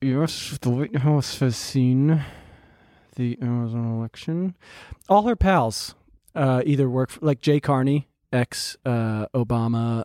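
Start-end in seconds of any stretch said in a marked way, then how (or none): 0.0-4.6 put-on speaking through gritted teeth. Imitating Jen Psaki's reaction: Jen Psaki through gritted teeth. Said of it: "through her teeth".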